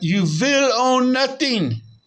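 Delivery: put-on foreign accent, W as V. Quoting lines in a self-called best impression: Klaus Schwab impression. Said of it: "They they say their W's like a, a, a V ... that's my best impression I can do of old Klaus Schwab".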